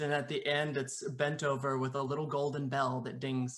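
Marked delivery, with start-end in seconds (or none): none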